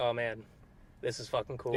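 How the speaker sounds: ordinary delivery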